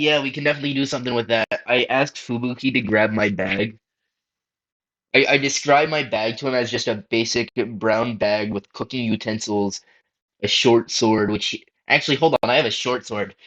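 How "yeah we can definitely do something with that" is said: mock, mild voice calling back from a distance. Answering a call from down the hallway, yelling back. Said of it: "I yell back".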